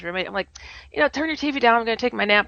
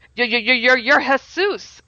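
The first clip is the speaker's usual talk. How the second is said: put-on stammer, stuttering, higher; 3 semitones higher, 3 dB louder than usual. Retelling meeting a man who asks if they know him: retelling own stuttering. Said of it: "I'm stuttering".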